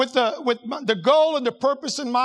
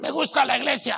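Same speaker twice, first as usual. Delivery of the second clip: put-on, imitated smoker's voice. Quoting an 87-year-old lady who greets the pastor, in a smoker's voice. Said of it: "She's got the smoker's voice".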